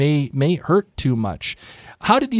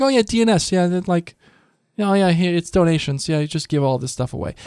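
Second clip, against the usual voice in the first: casual, offhand, couldn't-care-less nonchalant delivery; 4 semitones higher than usual. Retelling how Kate casually tells him she sold his stuff: imitating Kate, nonchalant. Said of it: "And then she's just like".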